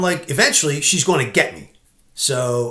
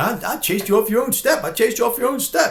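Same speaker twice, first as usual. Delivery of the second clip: high, mocking, gloating, taunting voice; 7 semitones higher than usual. Retelling how a woman had taunted him: imitating a woman taunting. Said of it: "I remembered her taunting me".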